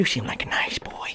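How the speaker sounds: soft, breathy, close whisper. Imitating the new clown offering Georgie his boat: new Pennywise voice. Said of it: "as for the new Pennywise".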